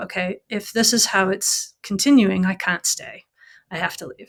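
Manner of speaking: ordinary delivery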